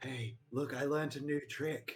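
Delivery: quiet, secretive half-whispering. Speaking to another character in the game: half-whispering in his ear. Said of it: "whisper in his ear".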